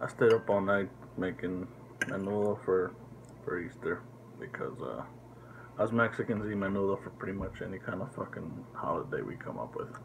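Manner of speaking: very quiet, low, hushed murmur. Speaker talks early morning while sisters are still asleep, speaking low. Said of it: "Speaking kind of low because my sisters are still asleep".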